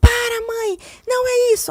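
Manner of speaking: play-acted tearful, very high, loud, drawn-out wail. Retelling how her son reacted when she raised it: imitating son getting upset. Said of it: "Aí ele chora".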